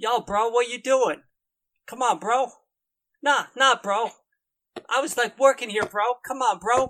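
angry bro-dude voice. Interrupted by someone at the door, he looks up angrily, angry bro voice. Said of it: "he looks up angrily at this intrusion and is like".

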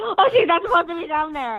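play-acted, high-pitched, freaked-out sudden panic. Retelling a mother noticing the dog got out: imitating mom freaking out. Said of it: "my mom freaked out".

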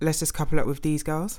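ordinary talk

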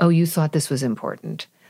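normal talking voice

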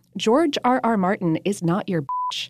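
ordinary talk, nothing marked

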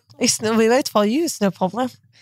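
put-on French accent. Repeating the tour guides' line when asked, imitating a French accent. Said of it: "Do the accent again".

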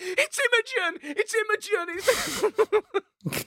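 very high, elated, excited, drawn-out cheering. Retelling cheering at the back during a game: imitating own excited cheering. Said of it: "Beside myself at how good this game was".

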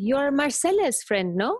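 put-on heavy French accent. Retelling what a french guy said when he walked up in the street, thick french accent. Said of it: "with this thick French accent".

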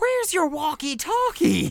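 disturbingly high-pitched, booming, loud voice. Retelling the moment a normally gruff man walks into frame, in a disturbingly high-pitched Norton voice. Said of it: "in a like disturbingly high pitched voice".

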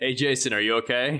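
deadpan, flat, expressionless delivery. Retelling a scene, quoting a bouncer speaking to two brothers: retelling a deadpan line. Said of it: "He just totally deadpans the line".

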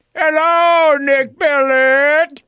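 put-on weird, very high, old-timey country voice. Greeting the guest, the speaker uses a weird old-timey country voice. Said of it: "say hello to him with that voice".

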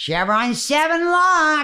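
clownish, over-the-top, very high, slow, overblown delivery.

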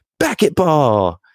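put-on gleeful, stubborn, intense insistence, very high-pitched. The speaker acts out how he keeps repeating his word, imitating him insisting happily. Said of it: "he'll just insist".

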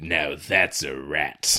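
low, soft, slow smug delivery, savoring it. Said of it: "Jeff Fahey, is like".

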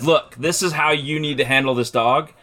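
ordinary talk

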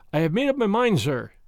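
ordinary talk

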